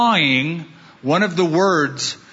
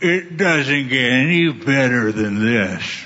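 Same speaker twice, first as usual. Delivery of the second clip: put-on slurred, smeared-together drunk speech; 4 semitones lower than usual. Retelling what one drunk spectator at a baseball game said, imitating slurred drunk speech. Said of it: "in a slurred manner".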